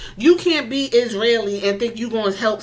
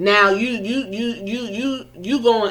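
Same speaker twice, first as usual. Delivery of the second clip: stuttering, much slower. Talking about Road Dogg's past, stuttering. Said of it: "I was stuttering".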